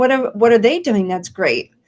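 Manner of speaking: ordinary talk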